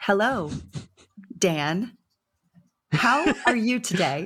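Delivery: very slow, halting reading with big gaps. Showing how to read a beginner-level English recording, very slow with big pauses. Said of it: "you have to put these big pauses in".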